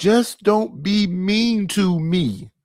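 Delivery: very slow, high, drawn-out, near-tearful begging plea. Imitating what men on these shows say: imitating men begging. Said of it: "almost crying and begging".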